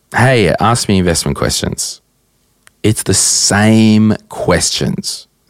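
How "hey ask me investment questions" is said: ordinary talk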